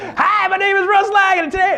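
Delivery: very high-pitched, overeager, over-the-top cheesy salesman voice. Coaching on vocal energy, the speaker shows going too high: used car salesman voice. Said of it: "used car salesman thing".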